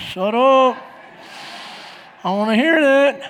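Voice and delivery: sulky, annoyed voice. Retelling a reply to a wife's praise: imitating a grumpy attitude. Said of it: "I kept giving her attitude".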